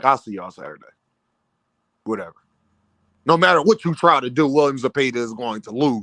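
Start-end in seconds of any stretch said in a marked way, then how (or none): 0.0-2.3 mock very low, quiet, tired, somber tone. Retelling how Shakur said he was tired: mock-somber Shakur impression. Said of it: "in a somber voice".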